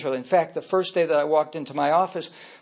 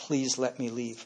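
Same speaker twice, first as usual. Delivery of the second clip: mock desperate pleading, much quieter; 4 semitones lower, 9 dB quieter than usual. Recalling a scared secretary who begged to leave, acting out her begging. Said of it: "literally begged".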